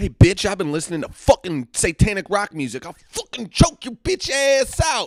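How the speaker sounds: put-on furious, swaggering tone. Retelling a reply to grandma about rock music: retelling own past threat. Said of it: "is what I said".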